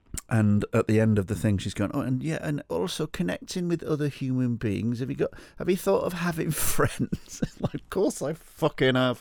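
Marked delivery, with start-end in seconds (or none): 1.9-7.4 put-on strange old lady, high and silly. Retelling advice a woman gave in her office, silly strange old lady voice. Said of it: "a silly voice where I do a strange old lady".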